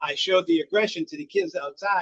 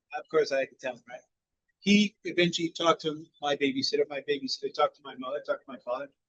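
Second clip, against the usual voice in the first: usual speaking voice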